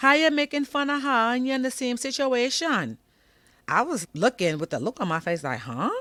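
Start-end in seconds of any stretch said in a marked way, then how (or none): 0.0-3.0 put-on, very high-pitched, thick Caribbean accent. Retelling what a mother said to her daughter, in a thick Caribbean accent. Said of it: "Excuse my my interpretation of Caribbean talk".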